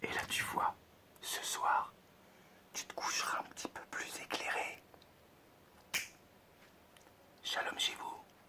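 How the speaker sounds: speaking in a whisper. Wrapping up the explanation and saying goodbye: whispering. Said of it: "Je sais pas pourquoi je chuchote".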